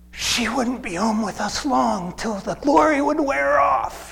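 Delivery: whispered aside. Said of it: "whispers to us".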